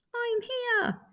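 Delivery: tiny, little, very high voice. A toy bear answers the other toys from across the room: little voice. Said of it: "came a little voice".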